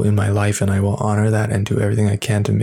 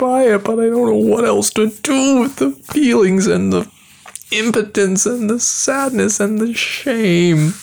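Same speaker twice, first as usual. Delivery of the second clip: very high, scrunched-face, self-pitying whine; 13 semitones higher than usual. Disgusted with themself, the speaker talks in a self-pitying whine. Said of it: "This is like that self-pitying face scrunchy whine".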